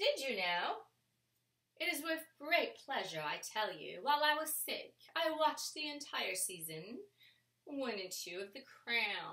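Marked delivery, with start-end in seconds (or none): 0.0-4.0 put-on British accent. Mama speaking to Gigi: put-on British accent. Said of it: "speak to you in a British accent".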